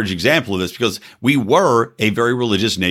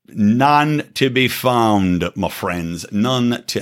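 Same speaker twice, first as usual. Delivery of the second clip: put-on British accent, very slow and drawn out. Commenting on missing outrage, then slipping into a british accent. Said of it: "I started doing a British accent there".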